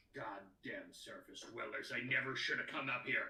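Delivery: low griping grumble, muttered under the breath. The game master voices a Duergar who just missed a swing with his war pick: muttering. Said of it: "he mutters".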